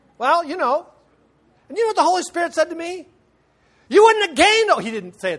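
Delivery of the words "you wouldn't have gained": mock loud, high-pitched hollered preacher voice. Quoting what the Holy Spirit said to him: hollered preaching voice. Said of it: "He never hollers at me like that".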